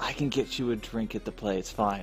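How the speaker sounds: whispering in character. Quietly telling a companion a drink is possible at the play: whispering in character. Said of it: "I'm gonna whisper to Elation".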